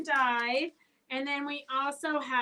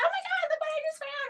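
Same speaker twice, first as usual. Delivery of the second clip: put-on very high, thrilled, gushing, excited squeal. Speaker retells shoppers showing a purchase to their girlfriends, mock-excited shopper. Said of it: "And they were all excited".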